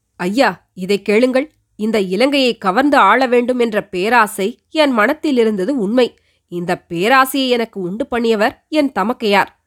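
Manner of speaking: ordinary delivery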